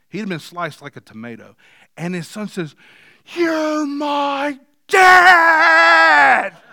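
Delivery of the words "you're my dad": very high, very loud cry, "dad" stretched out. Retelling a son calling out to his father in a gym, imitating a son's cry. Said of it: "This cry comes out".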